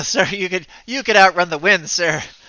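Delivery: high, loud talking through laughter. Voicing guards answering their captain, laughing while talking. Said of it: "they kinda laugh a little bit and go".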